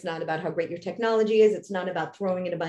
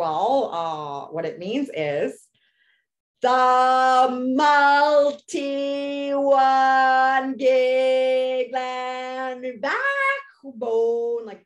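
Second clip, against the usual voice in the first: slow, patient, pitched-up explaining tone; 6 semitones higher, 3 dB louder than usual. Retelling how a man explained a term to the speaker, very slowly. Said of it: "like explained to me very slowly if I was a very problematic child".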